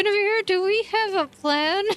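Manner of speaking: speaking through clenched teeth. Narrating a scene, voicing a character who speaks through gritted teeth. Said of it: "she says this through gritted teeth".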